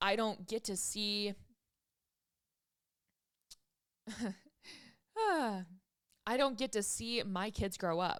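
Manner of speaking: tearful, weeping, crying voice. Speaker talking about something that struck a chord: crying. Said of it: "I don't know why I'm crying about this".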